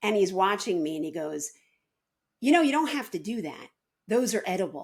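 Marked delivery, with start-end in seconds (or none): 2.4-4.9 mock lofty know-it-all voice, superior and condescending. Retelling what a kid said while watching fruit being peeled: imitating a superior tone. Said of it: "In this way that was so superior".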